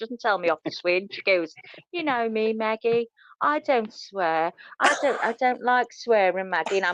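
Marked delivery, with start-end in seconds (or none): 1.9-6.8 slow, sweet, nice-as-pie voice. Retelling how a friend asks her not to swear: imitating a really nice voice. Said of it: "in a really nice voice".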